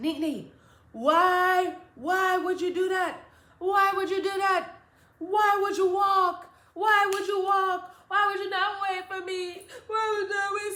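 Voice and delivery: tearful scolding, "why" stretched. Retelling the mother's reaction, imitating a crying mother scolding. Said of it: "So she just crying even more".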